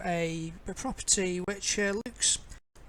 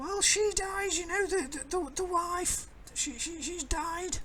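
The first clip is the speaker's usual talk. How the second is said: put-on old lady voice, much higher; 11 semitones higher than usual. Telling a story, voicing the old lady across the road, old lady voice. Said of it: "Old lady voice".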